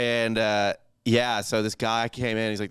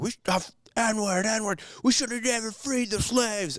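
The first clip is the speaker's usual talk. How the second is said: mock, very high-pitched, unhinged screaming rant; 13 semitones higher than usual. Recounting a man seated next to him, imitating someone screaming. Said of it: "And he's screaming".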